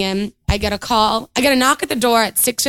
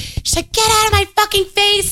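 put-on full-lungs scream, much higher; 11 semitones higher than usual. Speaker acts out a woman yelling at friends trying to talk to her, retelling a full-lungs scream. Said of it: "she's screaming at the top of her lungs".

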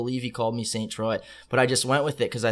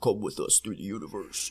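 cheesy, deep, pitched-down trance-sample voice; 4 semitones lower, 8 dB quieter than usual. Describing hard style trance music, imitating a cheesy down-pitched voice. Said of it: "cheesy, uh, down-pitched voice".

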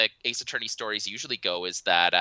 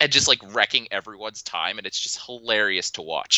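normal talking voice

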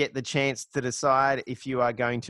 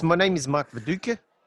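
put-on European accent; 3 semitones higher than usual. Joking about Australian players' put-on interview accents, doing a Mark Viduka accent. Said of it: "say Mark Viduka in Mark Viduka's accent".

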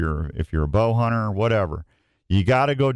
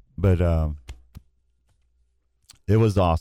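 emotional, choked-up voice catching in the throat; 4 semitones lower than usual. Finishing a story about a hunt and a lost dog: getting choked up. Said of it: "I'm getting a little choked up".

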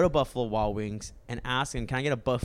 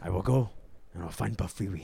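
failing, put-on attempt at a Scottish accent; 4 semitones lower, 3 dB quieter than usual. Performing a quoted line in a put-on Scottish accent. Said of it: "That's my Scottish accent".

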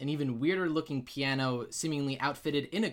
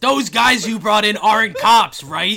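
blaring, very loud, high megaphone-style shout; 7 semitones higher, 17 dB louder than usual. Speaker jokes that a man used a megaphone instead of whispering, mock megaphone shouting. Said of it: "he grabs a megaphone".

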